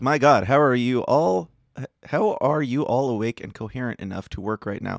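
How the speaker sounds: ordinary talk, nothing marked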